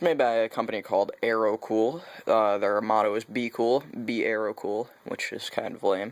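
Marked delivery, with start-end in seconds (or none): none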